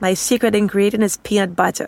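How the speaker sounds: put-on whisper. Retelling what someone whispered in their ear: imitating a whisper. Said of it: "he whispers in my ear".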